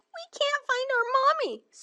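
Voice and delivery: very high, squeaky voice of tiny mice. A narrator reads the tiny mice answering a question, squeaking like tiny mice. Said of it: "squeaked the tiny mice".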